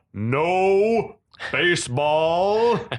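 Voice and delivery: announcing call with "no" stretched out long. Describing a show scene to another speaker, quoting Kuzo booming out. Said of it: "we got Kuzo booming out".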